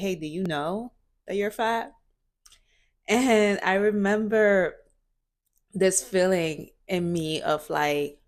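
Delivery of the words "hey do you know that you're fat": blunt, plain, matter-of-fact, no softening at all. Retelling a remark someone made at her home: imitating a matter-of-fact remark. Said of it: "in a very matter-of-fact way".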